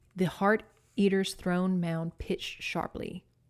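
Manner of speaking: usual speaking voice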